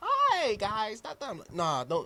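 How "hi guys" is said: put-on high, polite, polished professional voice. Mocking how people change their voice to sound professional, in a mock professional voice.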